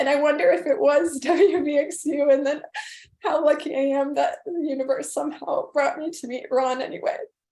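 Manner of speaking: tearful, crying through the words. Sharing personal memories, crying while speaking. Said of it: "so sorry to cry so much".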